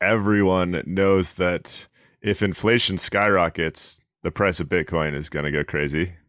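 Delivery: fake-sincere, ironic, sarcastic, tongue-in-cheek tone. Telling the other speaker a claim about Bitcoin and inflation: sarcastic tone. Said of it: "can't tell the sarcasm in my voice".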